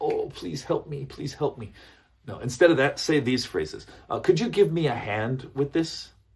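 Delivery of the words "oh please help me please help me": needy, imploring, pleading begging tone. Showing how not to sound when asking for help, begging. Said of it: "you don't want to sound like you're begging".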